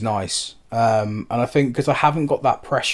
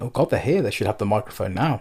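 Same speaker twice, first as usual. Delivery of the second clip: plain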